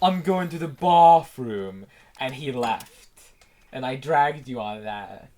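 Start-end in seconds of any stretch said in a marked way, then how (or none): 0.0-1.9 put-on very posh upper-class accent, raised voice. Retelling what Snake said before he left, imitate Snake's poshest accent. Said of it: "with the poshiest accent".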